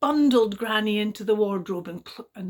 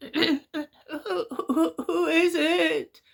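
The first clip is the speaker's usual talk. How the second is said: put-on frail, feeble granny voice, very slow and drawn out; 7 semitones higher than usual. Reading a fairy tale, Granny answers the knock at her door in a weak, feeble voice. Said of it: "Said rather a weak and feeble voice".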